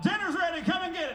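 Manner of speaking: high, hollered call. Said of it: "you holler".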